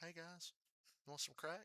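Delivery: very soft, hushed, chummy, friendly voice. Joking about becoming a dealer and offering crack: put-on friendly crack dealer voice. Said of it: "like a friendly crack dealer".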